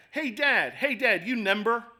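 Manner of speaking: put-on slow, small toddler voice. A dad retells his little son calling from the back of the van: imitating a little kid. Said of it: "He's that little".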